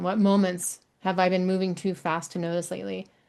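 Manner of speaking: usual speaking voice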